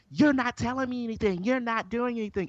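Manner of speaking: high, heated, accusing rant. Retelling a quarrel in a parking lot, imitating a woman getting loud. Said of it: "Then she started getting loud".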